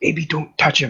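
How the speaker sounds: half-whispered stage voice. Grabbing another character's arm as he walks over: half-whispering a warning. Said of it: "whisper in his ears".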